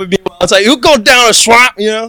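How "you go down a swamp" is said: put-on Cajun accent, higher. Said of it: "that's a Cajun guy".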